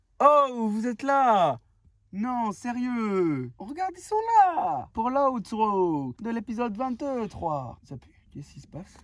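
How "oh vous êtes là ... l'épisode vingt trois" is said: put-on slow, drawn-out Italian accent. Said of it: "t'as envie de faire un accent en mode ratatouille".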